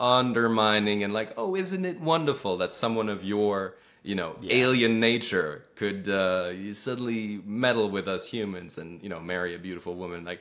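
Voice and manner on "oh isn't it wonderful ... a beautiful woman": ordinary delivery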